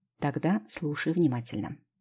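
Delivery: ordinary delivery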